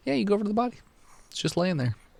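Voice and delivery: smug, self-satisfied, very high-pitched voice. Telling players their character reaches a body lying there: smug. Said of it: "He sounds so smug".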